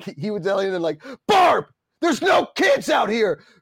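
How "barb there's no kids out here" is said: put-on furious scream, higher and louder. Retelling a neighbour's outburst about the doorbell: imitating a man screaming. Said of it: "he was screaming at his wife".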